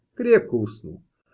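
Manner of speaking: plain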